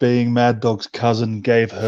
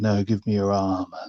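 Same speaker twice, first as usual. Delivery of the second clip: mock seductive woman's voice, quieter; 2 semitones lower, 4 dB quieter than usual. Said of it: "And she's so seductive".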